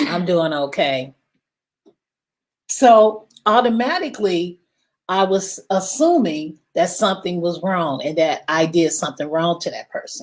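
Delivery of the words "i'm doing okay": mock dry, flat delivery, lower pitch. Retelling a phone call to a staff member, imitating a dry flat greeting. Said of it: "They was real, real dry".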